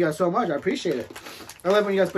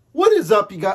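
loud speech with the voice cracking; 4 semitones higher, 9 dB louder than usual. Opening greeting to the audience, voice cracking. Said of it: "that my voice cracked".

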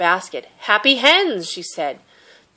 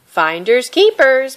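high raised calling voice; 6 semitones higher, 6 dB louder than usual. A girl running off with her hen calls back to the chasing fisherman; called over her shoulder. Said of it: "Mei Mei called over her shoulder".

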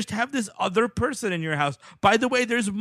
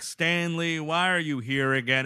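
mock slow, courteous, polite fatherly voice; 6 semitones lower than usual. Imitating a film dad asking Stanley why he is back: imitating a very polite dad. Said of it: "the dad is very polite".

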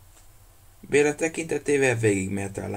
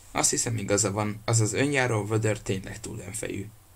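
ordinary delivery, nothing marked

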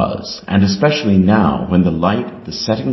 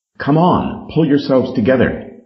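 hurried, pitched-up, urgent calling voice; 6 semitones higher than usual. Narrator reads Peter's line to the others, hasty. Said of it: "hastily said to the others".

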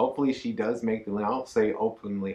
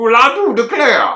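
very loud, high, heavy Southern drawl; 12 semitones higher, 13 dB louder than usual. Signing off a video, saying it in a Foghorn Leghorn accent. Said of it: "In your Foghorn Leghorn accent?".

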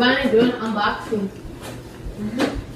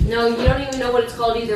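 ordinary delivery

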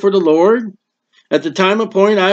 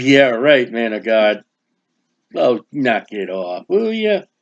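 mock scoffing, disbelieving, swooping sarcastic brush-off; 7 semitones lower, 4 dB quieter than usual. Retelling a bible woman's doubting reply to a man of god: imitating a sarcastic reply. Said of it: "She's taking it as a joke".

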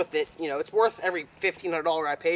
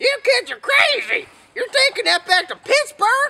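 put-on very high, shrill, loud old-farmer voice; 6 dB louder than usual. Recalling buying something from an old farmer, quoting him: imitating high-pitched old farmer. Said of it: "this old farmer with this high-pitched voice".

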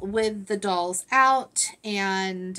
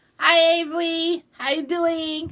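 clumsy, bad, high-pitched, loud baby voice; 8 semitones higher, 5 dB louder than usual. Voicing a doll greeting another doll: worst Dallas voice. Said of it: "that was the worst Dallas voice".

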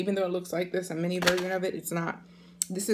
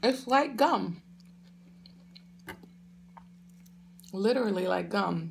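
talking while chewing, mouth full. Speaker tasting food on camera, still chewing while talking. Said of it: "I'm still chewing".

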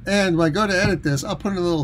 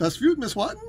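fake German accent, very high-pitched; 10 semitones higher, 4 dB quieter than usual. Opening a beer review bit: put-on German accent. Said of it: "We will be doing this one in the German accent".

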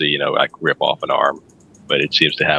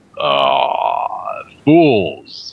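beastly creature monster voice. Voicing a Minotaur whose smile drops as it looks back: Minotaur voice. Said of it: "and it'll go".

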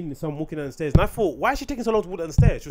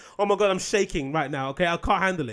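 ordinary delivery

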